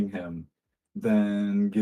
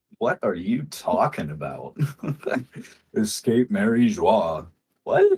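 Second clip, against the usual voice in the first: chuckling all through the words. Voicing a fellow who reacts to a claimed shared escape, chuckling while talking. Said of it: "he's just gonna chuckle and go".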